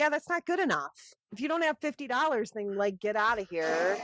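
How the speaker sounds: imitated rude, dismissive tone. Retelling a man refusing forty-five dollars for a tire: imitating a rude jerk. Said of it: "He's kind of a jerk".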